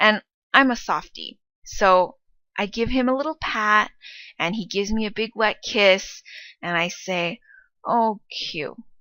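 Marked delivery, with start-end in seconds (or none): 7.8-8.8 hushed, really soft, toneless neutral "oh, Q". After q gives the speaker a big wet kiss, soft neutral tone. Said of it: "really softly in that fifth neutral tone".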